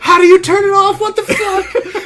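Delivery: very high, loud, panicked pleading squeal.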